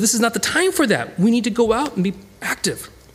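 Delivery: high, urgent voice with wide-ranging pitch.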